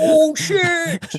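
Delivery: put-on very high, gushing excited outburst. Doing the bit of Lorne being excited about stuff: imitating Lorne being excited. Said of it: "it's just funny imagining".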